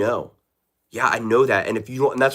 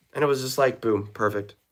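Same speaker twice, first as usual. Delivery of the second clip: ordinary talk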